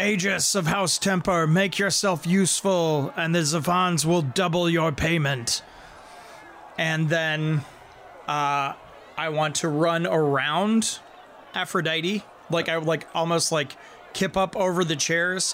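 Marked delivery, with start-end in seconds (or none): 0.0-5.6 grand, commanding herald-style proclamation. In a tabletop game, a player's character calls out to the githyanki, booming voice. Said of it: "just in a booming voice".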